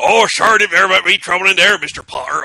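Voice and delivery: hammed-up, high, booming storybook character voice. Signing off a show with co-hosts, one host says goodbye in a Hagrid impression. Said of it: "that's my Hagrid impersonation".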